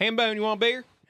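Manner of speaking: put-on West Virginian accent. Imitating friends from California after recalling their accent: imitating a West Virginian accent. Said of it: "the West Virginian accent of our friends".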